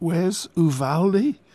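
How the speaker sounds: weak, feeble voice. A woman asks a question, weakly. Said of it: "Helen asked weakly".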